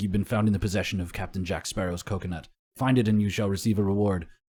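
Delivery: ordinary talk, nothing marked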